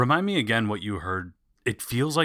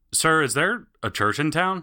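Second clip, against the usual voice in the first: raised, high voice calling out; 7 semitones higher than usual. Ryan calls over to the guard in the room: raised voice. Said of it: "Ryan raises his voice".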